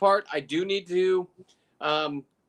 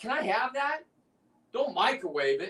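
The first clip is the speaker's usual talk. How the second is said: mild put-on yell, called out; 4 semitones higher than usual. Retelling asking a diver for a lobster leg: imitating own past yelling. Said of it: "I'm yelling at him".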